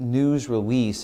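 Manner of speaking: news stressed, said slowly.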